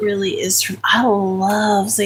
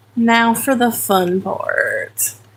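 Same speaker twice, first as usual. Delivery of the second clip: slow, sing-song sarcasm with drawn-out words; 2 semitones higher than usual. Sorting items into boxes, calling the next step fun: sarcastic. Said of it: "And I'm being sarcastic".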